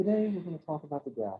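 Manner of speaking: lulling, soothing, calming voice. Playing a hired speaker with a soothing voice, opening the talk: soothing voice. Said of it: "someone who has a more soothing voice".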